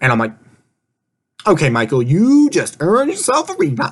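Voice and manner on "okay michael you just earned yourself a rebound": mock saucy, sassy, high sing-song voice. Retelling her reply when Rachel asked about Michael; retold sassy voice. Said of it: "That was my inner sassy voice".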